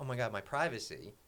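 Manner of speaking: ordinary talk, nothing marked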